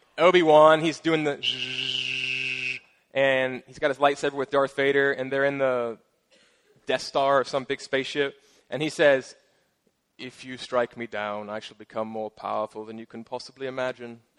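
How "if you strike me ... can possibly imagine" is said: put-on accent from Britain. Retelling a scene from the original Star Wars: imitating Obi-Wan Kenobi's British accent. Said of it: "That great, that great British accent".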